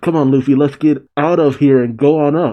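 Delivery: normal talking voice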